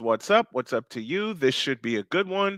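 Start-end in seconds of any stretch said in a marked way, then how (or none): none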